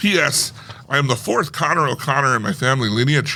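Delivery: ordinary delivery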